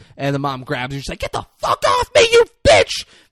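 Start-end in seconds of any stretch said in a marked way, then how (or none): 1.2-3.1 furious shriek, very high and very loud. Retelling a film scene, quoting a character: imitating a screaming yell. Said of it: "they're screaming at her".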